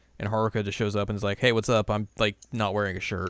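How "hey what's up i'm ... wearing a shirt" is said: plain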